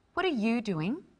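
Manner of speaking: inquisitive, genuinely interested, curious tone. Demonstrating how inflection changes meaning in a short dialogue, curious, interested question. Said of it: "asking a question, being curious and interested".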